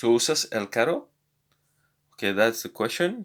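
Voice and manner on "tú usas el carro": rising pitch at the end on carro. Spanish lesson on asking a question, rising pitch on carro. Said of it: "we have to raise our voice at the end of the sentence".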